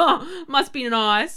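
very loud, raging, drawn-out bitter sarcasm. Retelling a thought on seeing a woman helped by her mum: imitating own bitter thought. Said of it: "I'm just so, so raging about it".

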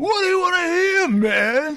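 very high-pitched put-on voice. Showing how he says a catchphrase: Riggs voice. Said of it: "You sound nothing like Riggs".

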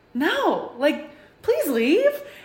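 firm, high-pitched, slow and drawn-out.

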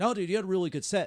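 high, fast, loud, emphatic reassurance.

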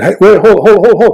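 slow, high screaming. Recalling calling in to a sports show phone line, retelling a scream. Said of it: "I started screaming".

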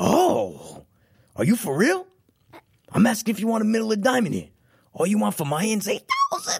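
high mobster voice, swooping, pitch swinging wide. Acting out a mafia movie scene as Lefty: Al Pacino as Lefty voice. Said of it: "you gotta get Pacino'd out".

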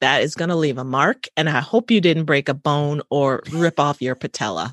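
ordinary talk

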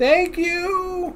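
put-on very high little old lady voice. Voicing the little old lady behind the counter during a purchase, in a little old lady voice. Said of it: "I'm going to drop the voice".

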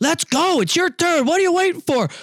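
put-on, very high, shrill bossy holler. Retelling a chute boss hurrying a rider: imitating a yelling chute boss. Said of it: "a chute boss yelling at me".

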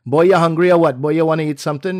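put-on Trinidadian accent. Acting out how Canadian-born relatives speak once they get together, imitating a Trinidadian accent. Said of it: "the Trinidadian accent comes out".

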